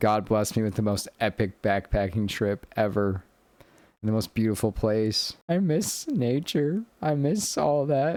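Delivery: speaking through tears, crying through the words. Talking about a last backpacking trip, crying while talking. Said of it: "And I'm sorry I'm crying".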